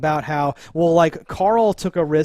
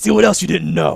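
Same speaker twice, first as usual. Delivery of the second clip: put-on rough gravelly voice; 4 dB louder than usual. Retelling a scene where a man shoots, then taunts: gravelly voice. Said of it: "It's just gravelly voice".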